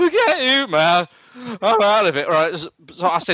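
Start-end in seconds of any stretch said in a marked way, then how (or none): 0.0-2.3 high, swooping, drawn-out, sing-song cartoon voice. Retelling an argument over a returned disc: Homer Simpson voice. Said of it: "I did a Homer Simpson and went".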